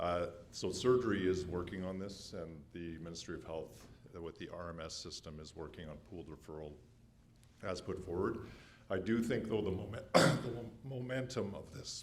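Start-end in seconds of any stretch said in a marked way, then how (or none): 8.9-12.0 words breaking on a choke, raised and high. Provincial head of surgery giving an update, choking on a macaroon: choking while speaking. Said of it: "sorry, I'm choking".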